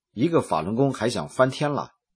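ordinary talk

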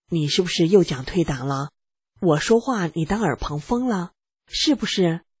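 normal talking voice

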